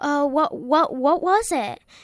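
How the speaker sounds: high, loud, startled, panicked blurt.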